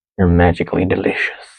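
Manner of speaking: low, sinister, menacing villainous tone. Quoting the cereal mascot's slogan in a sinister voice. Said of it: "I don't know why I said that in a sinister voice".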